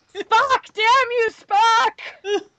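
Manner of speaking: very high, loud mock anguished yell.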